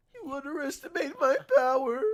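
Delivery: put-on squeaky, very high, loud old man voice.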